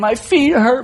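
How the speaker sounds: mock tearful crying. Speaker retells finding him crying in the bathroom doorway, imitating someone crying. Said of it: "his tears coming down his face and he's crying".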